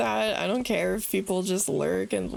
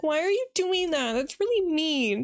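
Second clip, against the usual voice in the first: mock tearful, high voice, speaking through sobs; 8 semitones higher than usual. Retelling how a game villager reacted to being hit: imitating a crying villager. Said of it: "she started crying and being like".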